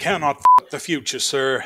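playful, loud, fun put-on cowboy voice. Reading a quote for another player to guess the show, in a fun cowboy voice. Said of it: "I'll do them all in fun cowboy voices".

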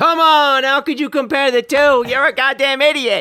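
shrill, very high, loud screaming outburst. Retelling how a show host reacts to a caller's question: imitating Mike screaming. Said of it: "he starts screaming".

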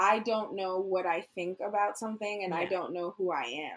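ordinary talk, nothing marked

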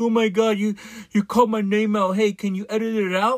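mock blubbering crybaby whine, high and whiny. Mocking someone who complained about having their name called out: imitating someone crying. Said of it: "crybaby was crying like".

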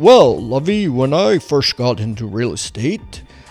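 fake stuffy voice, slowed down. Describing interviewees who all sounded too stuffy, doing a Thurston Howell impression. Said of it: "they sounded like Thurston Howell".

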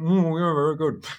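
high-pitched mumbling as if through a full mouth. Imitating diners answering a waiter mid-bite: imitating mumbling through full mouth. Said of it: "mumbles through a full mouth going".

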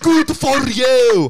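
put-on cranked-up Scottish accent. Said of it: "That's what he sounds like".

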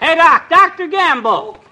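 very loud, shrill, high, drawn-out yell. Calling out to a doctor crossing the street: yelling across the street. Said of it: "stop paging me like you were a sick horse".

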